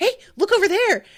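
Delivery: very high, loud, goofy character voice. Retelling a scene where Usopp tricks a guy, in a goofy Usopp voice. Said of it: "in his like regular goofy Usopp voice".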